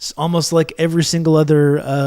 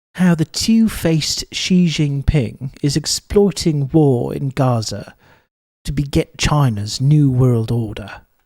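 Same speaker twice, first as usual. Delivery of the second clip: slow, posh, pompous British accent. Reading a title aloud in a pompous British accent. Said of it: "in a pompous British accent".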